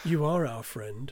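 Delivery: slightly sinister, a little menacing tone. Podcast host, told he sounded sinister, repeats the line to listeners slightly sinister. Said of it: "You said that in a slightly sinister way then".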